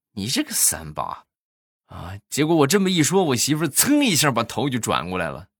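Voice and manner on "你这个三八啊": soft, grumbling mutter under the breath. Retelling what he said when his wife wanted another bag, muttered under his breath. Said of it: "我就小声说了一句".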